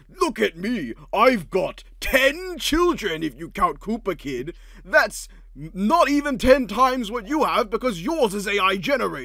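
high, booming, drawn-out, slow put-on voice. Acting out Bowser boasting at the fight: put-on Bowser voice that sounds like Eggman. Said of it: "The voice you were putting on sounded more like Eggman than Bowser".

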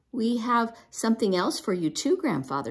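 ordinary delivery

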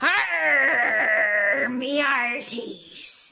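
stock pirate voice with an arr. Presenter asking boys and girls for their best pirate, pirate voice. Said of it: "let me hear your best pirate".

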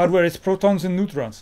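clumsy, bad French accent drifting toward German. Reading someone's comment aloud on a show, try it in a bad French accent. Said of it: "Should I read this with a French accent?".

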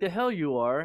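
indignant, angry tone. Retelling a partner's reaction to being woken at midnight: imitating someone cussing angrily. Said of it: "he starts cussing me out".

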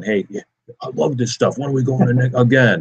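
put-on dog character voice. Talking to listeners, speaking for the dog on a run: dog voice. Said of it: "Dog voice is the best".

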